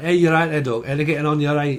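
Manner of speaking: northern English Yorkshire accent. Imitating how people in yorkshire talk: yorkshire accent. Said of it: "they talk a little bit like that".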